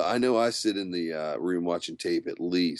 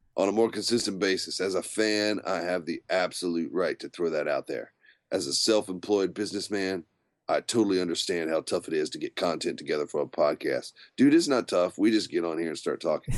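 ordinary talk

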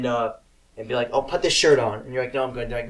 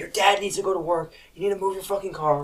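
mock high-pitched, loud screaming voice; 7 semitones higher than usual. Retelling how the speaker's mom woke them at seven, imitating her screaming. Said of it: "she's like screaming at me".

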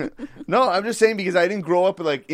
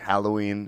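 put-on drawl, lower and quieter; 8 semitones lower, 4 dB quieter than usual. Imitating a TV character saying Halloween: Jamie saying Halloween, fast start, slow end. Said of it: "said really fast and then slow down the end of the word".

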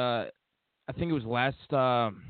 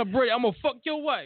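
very high, cranked-up comedian-style comic voice; 11 semitones higher than usual. Repeating a fan's rant from a clip: Tracy Morgan-like voice. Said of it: "It sounded like Tracy Morgan".

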